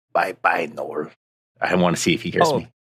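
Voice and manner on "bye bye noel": very soft, hushed, under-the-breath voice. Saying goodbye in character to test someone's hearing: said very quietly. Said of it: "I'm going to say very, very quietly".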